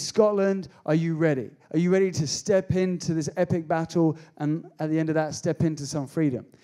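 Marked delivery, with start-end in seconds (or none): none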